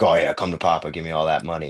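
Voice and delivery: mock bragging, boastful tone. Describing what not to do after winning: imitating a bragging winner. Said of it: "brag about it and be like".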